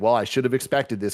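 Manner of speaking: ordinary delivery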